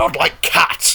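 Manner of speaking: high, impassioned, shrill squeak in a mouse voice. Reading the story aloud, voicing the mouse's reply to Alice in a shrill, passionate voice. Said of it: "cried the mouse in a shrill, passionate voice".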